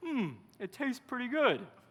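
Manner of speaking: words pushed through full mouth. Retelling answering a woman who pumped soap into their mouth, imitating a mouthful. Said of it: "with a mouthful of soap".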